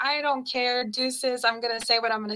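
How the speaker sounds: plain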